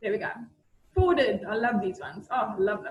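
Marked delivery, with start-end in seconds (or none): 1.5-2.9 ironic, insincere, sarcastic put-on delight. Reacting to a forwarded cv application: sarcastic. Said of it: "I'm being sarcastic".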